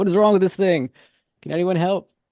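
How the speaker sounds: screaming at full volume, loud and high-pitched. Playing a man whose car broke down calling out for help, yelling really loud. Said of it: "screaming the F word and yelling really loud".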